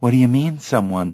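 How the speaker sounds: plain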